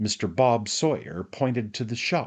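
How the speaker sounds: ordinary delivery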